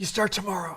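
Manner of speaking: mob boss voice, pitched very high. Retelling a phone call about an internship, doing Kevin's mob-boss voice. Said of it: "Kevin kind of talks like this".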